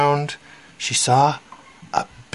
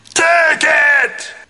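shrill, very high, loud shouting; 13 semitones higher, 5 dB louder than usual. A woman throws the bone out the window and shouts back, shouting loudly. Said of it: "In a voice just as loud, she shouted".

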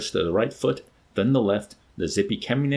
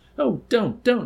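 very high-pitched, quavering, tremulous pleading voice; 13 semitones higher, 3 dB louder than usual. A woman, shaken by the shoulders by the savage, protests; tremulous protest. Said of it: "she protested in a voice made grotesquely tremulous by his shaking".

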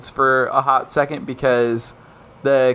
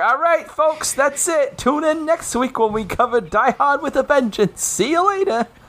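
fake North Bath accent, higher; 13 semitones higher than usual. Signing off until next week, put-on North Bath accent. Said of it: "Is that your North Bath accent?".

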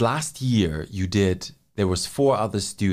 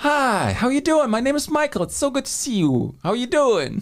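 friendly barista voice, pitched way up. Speaker pretends to greet a customer at the drive-thru window, in a Starbucks employee voice. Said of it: "let me pretend to be a Starbucks employee".

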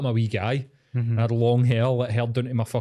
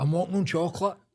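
play-acted, high-pitched shouting; 7 semitones higher than usual. Recalling being spiked and walking up Union Street: retelling a shout. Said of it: "I was shouting".

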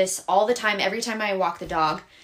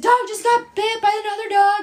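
mock frantic, very high, loud panicked blurt; 13 semitones higher, 5 dB louder than usual. Retelling calling someone to the park after the dog got bitten, acting out own freaking out. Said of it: "Like freaking out".

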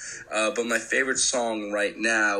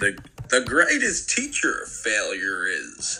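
clumsy little alien voice, slow, swooping, sing-song. Asked for his quote, the speaker does a bad Yoda impression. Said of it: "That was a bad Yoda impression".

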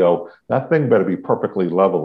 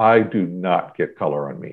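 put-on dead-serious, matter-of-fact deadpan, slow and straight; 3 semitones lower than usual. Retelling a man's answer to the speaker's question afterwards, in mock-serious deadpan. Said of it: "this very serious deadpan look".

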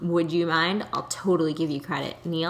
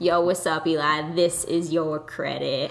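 put-on 90s radio DJ voice. Greeting their friend Eli to give him credit, in a 90s radio DJ voice. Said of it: "I made myself sound like a 90s DJ".

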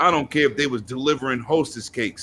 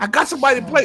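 put-on excited scream, higher pitch; 12 semitones higher, 4 dB louder than usual. Retelling how a friend screamed when asking about a game: imitating a friend screaming excitedly. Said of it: "He be screaming if he see a video".

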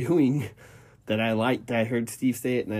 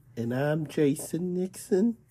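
high, put-on little old lady voice; 6 semitones higher than usual. Introducing oneself at the start of a podcast, in an old lady voice. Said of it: "Did you have to do the old lady?".

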